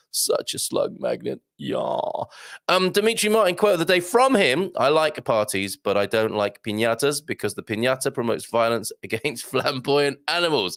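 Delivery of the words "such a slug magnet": put-on vocal fry voice. Host jokes about a name, saying it with Kardashian vocal fry. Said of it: "in a kind of Kardashian vocal fry way".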